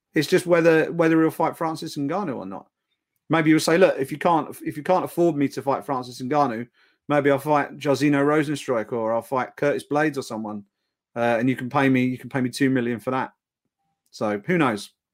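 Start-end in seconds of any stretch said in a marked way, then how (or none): none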